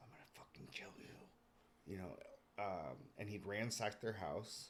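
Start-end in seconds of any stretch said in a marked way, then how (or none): 0.0-1.9 very quiet, hushed whisper through gritted teeth. Retelling what an attacker said to victims woken by a flashlight, in a clenched-teeth whisper. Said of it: "he had this like clenched teeth whisper".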